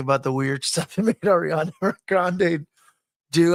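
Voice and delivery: speech broken by laughter. Describing a documentary about child acting, laughing while talking. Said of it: "I'm sorry, I'm laughing".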